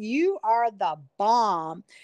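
very slow, drawn-out Texas drawl. Retelling a voicemail from Miss Gibbs, in Miss Gibbs's Texas accent. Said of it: "and she had this Texas accent".

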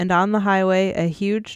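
ordinary delivery

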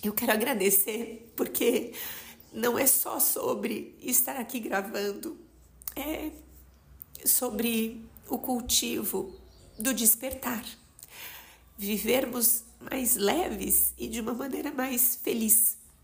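emotional, moved voice, audibly regaining composure. The speaker, while recording, thanks listeners after pausing to compose themself, moved. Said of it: "Espera, que eu vou me recompor aqui".

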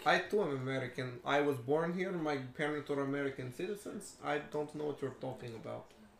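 put-on Russian-accented English. Man questioned about his nationality insists he is american, russian accent. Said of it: "what's with the accent then".

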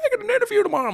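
play-acted loud, very high, tearful sobbing speech. Telling a story about her bike crash, imitating her crying. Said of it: "And she's like crying".

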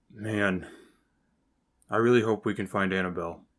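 muttering in put-on voice. Narrating a scene to the players, voicing Vambag as he mumbles. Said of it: "And he kind of mumbles".

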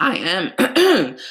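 put-on stuffy voice that cracks.

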